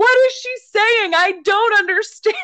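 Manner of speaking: very high-pitched screaming and yelling. Speaker retells not understanding grandma's French: retelling own screaming. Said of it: "And I'm like screaming and yelling".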